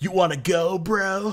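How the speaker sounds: high surfer-dude voice. Imitating a character who sounds like a surfer: Yamcha voice. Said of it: "Yamcha sounds like a surfer".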